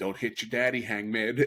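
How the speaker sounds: sassiest woman's voice, full of attitude. Retelling a woman in the crowd heard over a broadcast: imitating a sassy woman. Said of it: "you hear a woman in the sassiest voice go".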